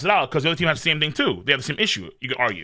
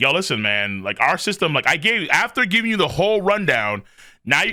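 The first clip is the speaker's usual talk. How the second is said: ordinary talk, nothing marked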